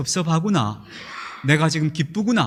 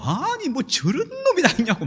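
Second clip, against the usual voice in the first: high-pitched angry outburst. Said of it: "화를 벌컥 냈어요".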